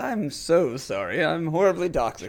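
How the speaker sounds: put-on voice, excessively courteous and overly polite. Mimicking the other speaker's apology, in a mock overly polite voice. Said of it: "In the most polite voice".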